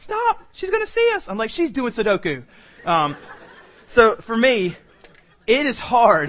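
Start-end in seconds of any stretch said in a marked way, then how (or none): 0.0-1.3 very high, urgent voice. Speaker retells his wife objecting, imitating wife's high voice. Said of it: "it gets real high".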